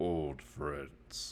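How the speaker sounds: deep, soft, rumbling monster voice. Game master voices a bugbear turning to a player at a wake, deep rumbling bugbear voice. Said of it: "kind of deep, like rumbling voice".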